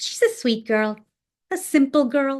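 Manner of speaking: sweet, gentle lilt. Showing a remark that sounds like praise but isn't: soft, gentle inflection. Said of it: "It's always said with this soft, really gentle inflection".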